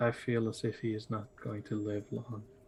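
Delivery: soft, hushed, secretive half-whisper, close and quiet. Voicing a character half-whispering toward Reina's ear, half-whisper. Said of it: "going to whisper towards Reina's ear".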